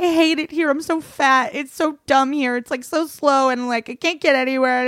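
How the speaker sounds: put-on high, sobbing, tearful crying rant. Retelling what was said while weeping at a bar: imitating own past crying. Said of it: "I'm crying. I'm like".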